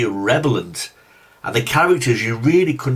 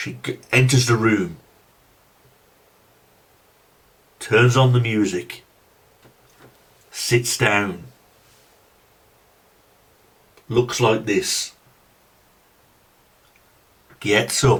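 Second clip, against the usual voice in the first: deliberately slow, dragged-out, plodding delivery; 3 semitones lower than usual. A reviewer narrates a movie scene to show its pacing, talking slowly. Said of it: "I'm talking slow".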